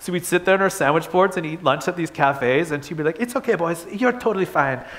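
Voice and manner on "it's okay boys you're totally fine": put-on mimicked Spanish accent. Quoting a friend's mom at lunch in a cafe, Spanish accent. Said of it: "she had an awesome Spanish accent".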